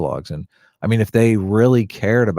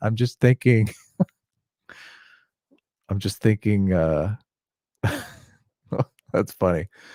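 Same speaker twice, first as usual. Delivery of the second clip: words broken up by laughing; 3 dB quieter than usual. Reacting to a chat during a stream, laughing while talking. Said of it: "I'm laughing at Ethan's chat".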